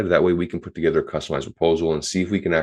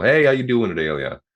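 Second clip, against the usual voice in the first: smiley upbeat emphasized hello, pitched up; 6 semitones higher than usual. Demonstrating how to open a call with a caller named Ilya: smiling accentuated greeting. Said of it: "I like to be a bit more accentuated on the outbound".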